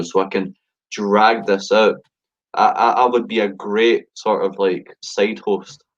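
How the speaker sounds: very slow, drawn-out, stalling speech. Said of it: "that's why I'm talking real slow right now".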